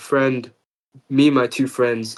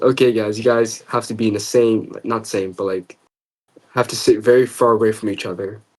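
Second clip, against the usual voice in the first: normal talking voice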